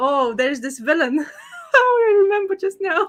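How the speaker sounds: talking through laughter. Starting to tell another speaker about a villain, laughing while talking. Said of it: "I'm laughing now before even telling everybody".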